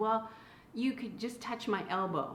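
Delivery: ordinary talk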